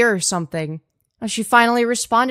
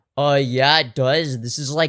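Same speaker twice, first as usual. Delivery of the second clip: put-on, faked manly voice; 8 semitones lower than usual. Answering chat that says the voice isn't manly: put-on manly voice. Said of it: "the most manly voice of all time".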